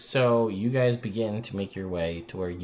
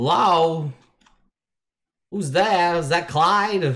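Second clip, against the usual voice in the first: elevated, very high, drawn-out calling voice; 9 semitones higher, 8 dB louder than usual. Voicing a Lich heard calling out from nearby: Lich talking in elevated voice. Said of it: "you hear the Lich talking in an elevated voice".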